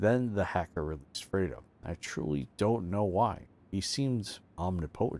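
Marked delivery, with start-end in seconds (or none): none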